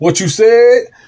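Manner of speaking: high-pitched, loud Tennessee accent with a drawl.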